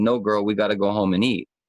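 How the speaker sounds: ordinary delivery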